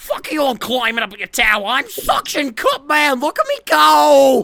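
very high, loud, boastful superhero-style shout, "go" stretched. After asking who can do a Suction Cup Man voice, do the Suction Cup Man voice. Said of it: "Who here can do a suction cup man voice?".

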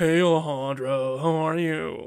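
loud, deep-voiced, flamboyant delivery. Retelling how a guy greeted the speaker, in a deep flamboyant voice. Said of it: "So he had a really deep voice, but he was like".

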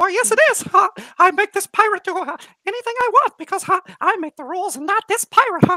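squeaky mouse voice. Answering his own question, the speaker replies as the mouse that owns him: terrifying mouse voice. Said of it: "very terrifying mouse".

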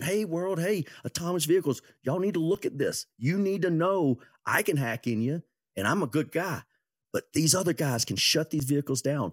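mock, high, alarmed screaming. Retelling how the guys who found the holes warned the world: imitating people screaming. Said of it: "They went and started screaming".

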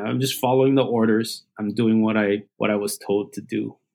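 ordinary talk

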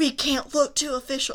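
mock high-pitched yell. Retelling how a man yelled across campus while walking away, retelling a yell. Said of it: "is yelling".

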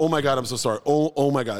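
put-on panicked stammering. Retelling spilling beer on a guest: retelling own flustered stuttering apology. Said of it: "I'm stuttering my way through".

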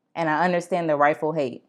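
ordinary talk

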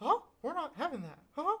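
squeaky, high, sing-song voice. Voicing imagined Disney executives, Mickey Mouse voice. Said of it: "That was a pretty good Mickey Mouse impression".

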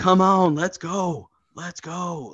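mock high shouted yelling, urging on. Retelling a younger woman yelling at someone beating a man, imitating her yelling. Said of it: "She was yelling like".

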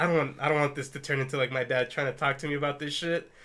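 ordinary delivery

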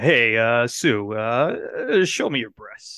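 badly drawn-out delivery. Joking about a casting rumor, doing a bad Howard Stern impression. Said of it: "that's probably the worst Howard Stern impression".

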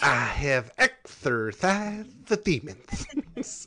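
hammy, bad comic voice, dragged out very slowly. Recalling a line from Pet Detective: worst Jim Carrey imitation. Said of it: "my worst Jim Carrey imitation".

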